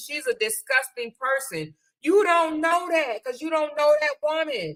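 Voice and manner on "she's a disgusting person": normal talking voice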